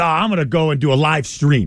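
ordinary delivery

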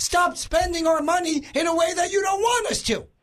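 high, pretend shouted yell. Mocking how people could only yell at an unelected commission: mock yelling. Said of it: "we're going to yell again".

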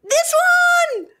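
shrieking, very high pitched, excited scream. Finding the toy on her phone while searching: screaming. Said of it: "Sorry for screaming".

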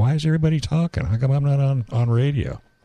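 anxious, nervous, fretful, worried voice. Retelling what a nervous driver keeps saying: imitating a nervous driver. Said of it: "He's kinda nervous. He's going like".

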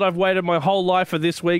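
ordinary talk, nothing marked

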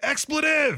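high, really loud mock yell. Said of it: "Like, the really, really loud".

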